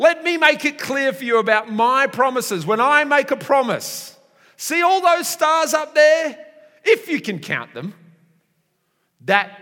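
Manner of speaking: insistent, emphatic voice. Retelling a promise made to Abram under the stars: slightly raised voice. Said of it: "I think he raised his voice a little bit".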